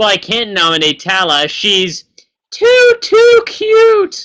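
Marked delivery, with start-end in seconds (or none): 2.5-4.3 high, loud squeal, rising in pitch. Teasing Jillian about her reaction, imitating Jillian's high squeal. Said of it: "the most high pitched squeal I've ever heard".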